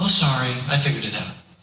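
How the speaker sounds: put-on relaxed, unbothered, calm and easy voice. Retelling a client's second voicemail, imitating a calm client. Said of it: "all calm".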